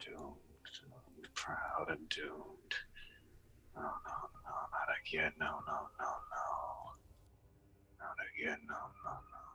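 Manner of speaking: hushed, whispered muttering under the breath. Voicing a character staring at his broken crossbow: muttering to himself. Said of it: "muttering to himself now".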